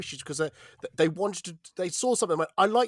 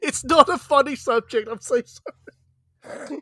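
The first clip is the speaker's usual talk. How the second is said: giggly, laughing through it, high and loud; 8 semitones higher, 7 dB louder than usual. Apologizing mid-conversation for laughing at a serious subject, laughing while talking. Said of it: "I can't stop laughing".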